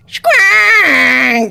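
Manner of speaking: high, raspy, drawn-out creature call. Voicing a creature that jumps out and calls: Squonk creature call. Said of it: "Squonk jumps between her arms and goes".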